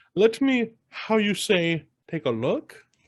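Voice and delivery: horrible fake German accent, high, very drawn out. Retelling a man pretending to be a German shark expert: horrible fake German accent. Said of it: "a horrible accent that every once in a while he goes".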